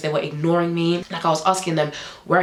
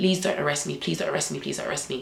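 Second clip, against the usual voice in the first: put-on desperate begging, quieter; 3 semitones lower, 6 dB quieter than usual. Retelling a moment facing arrest, the speaker reenacts desperate begging. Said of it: "I was begging for my life".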